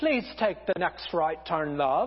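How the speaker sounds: low, put-on English sat-nav lady accent. Joking about GPS directions, the speaker imitates the English lady GPS voice. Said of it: "the English lady that goes".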